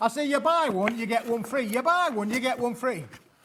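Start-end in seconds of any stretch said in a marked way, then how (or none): 1.7-3.0 put-on northern English Yorkshire accent. Announcing a favourite Yorkshire impression, the speaker does a Yorkshire accent impression. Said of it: "my favourite Yorkshire impression".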